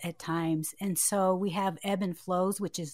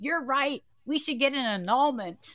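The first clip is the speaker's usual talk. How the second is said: acted-out loud, high-pitched shouting; 6 semitones higher than usual. Retelling what he yelled back at the speaker, imitating him yelling back. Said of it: "He yelled back at me".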